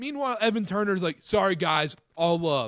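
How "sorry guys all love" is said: careless, offhand, half-hearted throwaway delivery. Mocking a player's response to criticism: Evan Turner's half-assed apology. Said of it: "the most half-assed apology".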